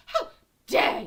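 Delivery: very loud shout with heavy stress on the word "how". Chatting with viewers, doing an impression: Greta Thunberg voice. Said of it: "That's my best Greta voice".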